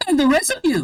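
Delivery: put-on very high, stray Scottish accent. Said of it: "that's the wrong voice".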